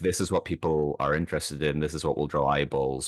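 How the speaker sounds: plain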